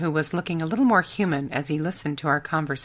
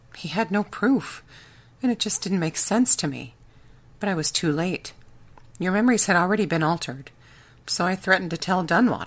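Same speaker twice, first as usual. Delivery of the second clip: plain reading voice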